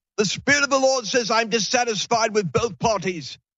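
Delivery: put-on high South African accent. Quoting the prophet's words again, in his South African accent. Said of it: "He had this South African accent".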